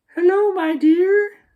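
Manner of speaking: very high, creaky disguise voice, like a wolf. Narrator reads the wolf answering the girl from grandmother's bed, in a high, creaky voice. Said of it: "said the wolf in a high, creaky voice".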